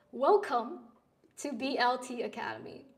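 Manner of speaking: usual speaking voice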